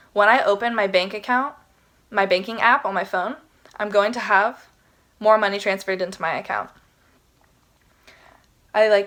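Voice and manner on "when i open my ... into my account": ordinary talk, nothing marked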